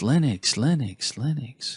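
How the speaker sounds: special voice for emphasis. Listing desktop platforms to set up next, repeating one: put-on emphasis voice. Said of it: "That's my voice I use for showing emphasis".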